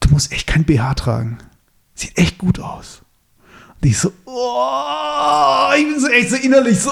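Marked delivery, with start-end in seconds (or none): 0.0-3.0 acted-out, put-on whisper. Retelling what a man on TV whispered in a woman's ear: retelling a whisper in her ear. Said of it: "und flüstert sie so ins Ohr so".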